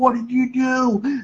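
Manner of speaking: put-on yelling, high and slow.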